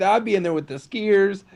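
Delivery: put-on casual delivery. Imitating another speaker's line: imitating a nonchalant tone. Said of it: "I love how you said it so nonchalantly".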